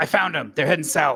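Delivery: booming, alarmed yell, very loud. Voicing a guardsman who spots the fleeing players: guardsman yelling. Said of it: "a guardsman yell".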